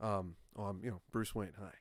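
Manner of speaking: plain, effortless, natural everyday voice. Retelling how an actor played Bruce Wayne: George Clooney as Bruce Wayne. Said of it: "this is what he sounded like".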